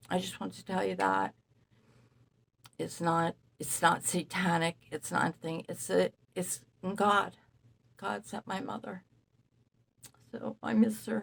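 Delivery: tearful speech, talking through tears, crying. Speaking to listeners about their late mother, crying. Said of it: "I'm sorry for crying".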